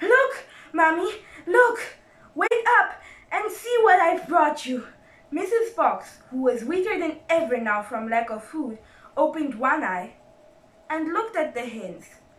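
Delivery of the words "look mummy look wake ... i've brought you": breathless, short-of-breath crying out. After a long run, he bursts in on his weak mother, crying out of breath. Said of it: "he cried out of breath".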